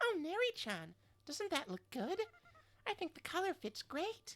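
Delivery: cute, adorable little idol character voice. Narrator voices Faye speaking to Neri-chan about a doll, high-pitched Faye voice. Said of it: "I'm doing like two high pitched voices".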